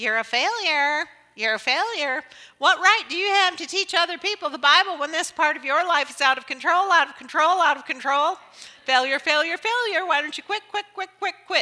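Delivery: shrill, loud, bird-like voice. The speaker voices the enemy sitting on their shoulder, in a bird-like voice. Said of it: "he sounds just like a bird when he does it".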